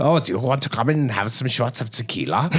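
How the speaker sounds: put-on scientist voice with European accent. Retelling meeting a research director at a booth: imitating a Doctor Science voice. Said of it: "total science, Doctor Science voice over here".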